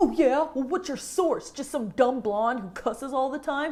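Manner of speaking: bad, clumsy, dismissive dumb-bro voice. Imitating someone who dismisses data and sources, in a bad bro voice. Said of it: "That's my bro voice".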